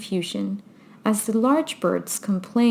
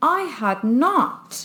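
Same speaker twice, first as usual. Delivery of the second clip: sharp, high, very angry snapped cry; 6 semitones higher than usual. Narrator reading Alice's story gives the mouse's retort to Alice: sharp, very angry cry. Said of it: "cried the mouse sharply and very angrily".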